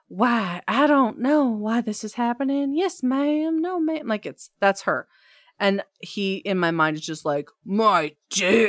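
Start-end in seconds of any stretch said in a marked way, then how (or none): 0.2-4.1 put-on stock Southern girl accent. Giving a reader context on the character Tilly, stereotypical Southern girl voice. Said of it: "stereotypical Southern girl where she's like".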